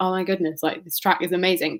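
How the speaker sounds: ordinary talk, nothing marked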